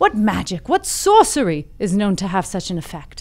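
put-on British English accent, exclaimed. Storyteller voicing the wise men's exclamation, in an English accent. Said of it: "They were English".

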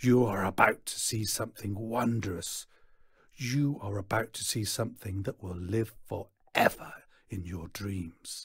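ordinary delivery

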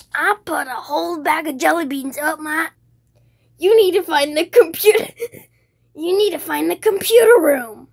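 very loud, belted cartoon sidekick voice. Showing off a voice-acting impression, in a Tails voice. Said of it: "I have a really good Tails voice".

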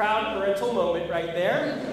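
ordinary delivery

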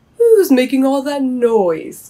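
loud, high calling out. Old Owl hears Bobby crying and calls down from above, calling out. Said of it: "called a voice from above".

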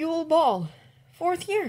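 very high-pitched, hesitant voice. After a moment of silence, he admits something to the other man, soft voice. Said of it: "his voice soft".

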